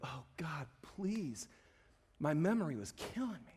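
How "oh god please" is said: soft, tearful, sobbing voice. Retelling a past prayer at a low moment: retelling own sobbing plea. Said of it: "And I was just sobbing".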